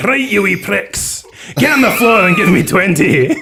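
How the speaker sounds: very high put-on Scottish accent, best effort. Recalling going outside every lunch at one p.m., put-on Scottish accent. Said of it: "I'd put on my best Scottish accent".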